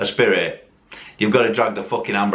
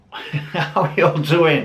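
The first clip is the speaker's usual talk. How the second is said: slow speech through a laugh; 6 semitones higher than usual. Greeting viewers at the start of a video, laughing while talking. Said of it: "I don't know why I'm laughing".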